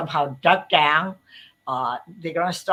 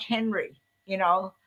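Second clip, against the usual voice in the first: ordinary talk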